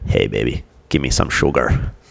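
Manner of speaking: deep, low, dropped movie-style voice. Quoting a line from Army of Darkness with a sick voice: Army of Darkness quote in low voice. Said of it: "Now with this voice, I can say".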